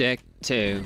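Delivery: put-on flat, monotone robotic machine voice. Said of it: "I'm the most monotone computer voice ever conceived".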